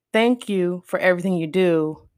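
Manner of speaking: ordinary talk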